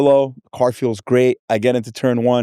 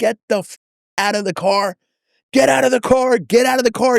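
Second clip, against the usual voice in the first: loud shouting, repeated; 11 semitones higher than usual. Retelling a track story, imitating a man yelling at the speaker and their dad. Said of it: "He's yelling at me and Dad".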